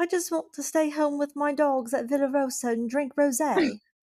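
put-on slow, high, drawn-out English accent. Joking about a reality star wanting to stay home: imitating Lisa Vanderpump. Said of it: "The fact that you sound just like her".

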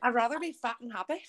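put-on Scouse accent. Retelling what a scouse fighter said, in a scouse accent. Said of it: "That accent was flawless".

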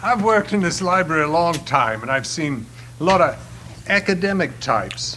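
horrible, bad, put-on fake Australian accent. A library worker talks about academic types, in a horrible australian accent. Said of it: "It's a horrible Australian accent".

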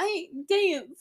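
put-on Brooklyn accent. Quoting Harry's line, Harry in a Brooklyn accent. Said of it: "The Brooklyn accent".

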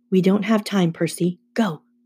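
ordinary talk

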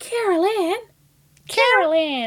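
very high, loud little helium-lady voice. Remembering a lady who came to save the day, helium-lady voice. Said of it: "Little high-pitched voice, helium lady".

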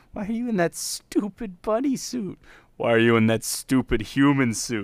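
put-on childish, giggling, trance-like young child voice. Quoting a character who speaks in a trance: imitating a childlike giggly voice. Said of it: "It's like he turns into an even younger child".

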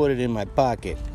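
put-on New York accent. Delivering a joke's punchline on a podcast, New York accent. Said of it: "That New York accent was perfect".

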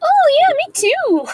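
squeaky, very high, loud anime character voice. Jokingly joining in on the other speaker's word, Japanese anime character voice. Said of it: "That sounded like a Japanese anime character".

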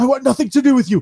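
put-on Canadian wrestler voice. Act out Kevin Owens running away from Braun Strowman's bullying, in Kevin Owens's Canadian accent. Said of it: "in his Canadian accent".

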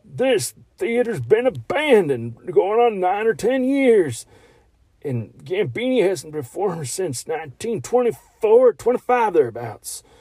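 young speaker's bad, fake old-geezer voice. Describing a character, the speaker repeats some of his lines in a bad old man impression. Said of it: "He sounds like the way a 14-year-old doing an old man impression would sound".

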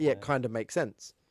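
ordinary delivery

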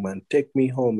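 high, mild half-shouting. Retelling how he shouted to be taken home: imitating someone shouting. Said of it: "now he's shouting".

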